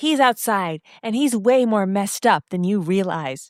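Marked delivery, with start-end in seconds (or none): none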